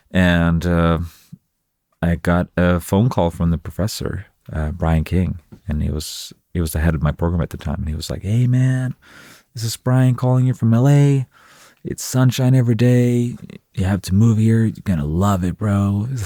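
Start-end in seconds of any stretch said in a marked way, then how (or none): 8.2-16.0 mock gushing, all-sunshine, high and super positive. Retelling a call from the program head inviting a move: imitating a super positive voice. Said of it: "super positive voice".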